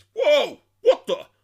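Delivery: very loud, shrill, blurted exclamation. Describing an actor's different roles, Brock Samson impression. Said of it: "always doing that impersonation".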